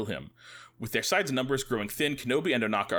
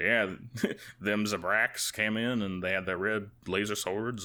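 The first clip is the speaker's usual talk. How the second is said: put-on down-home, folksy American southern accent; 2 semitones lower than usual. Retelling what a guy said when briefing about a raid, southern accent. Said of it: "this guy has like a like a southern accent. He's like".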